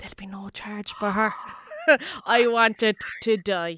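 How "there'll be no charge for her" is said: whisper, lower and quieter. A teacher retells what a pupil's parent said to the till lady: retelling a whisper. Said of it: "he whispered".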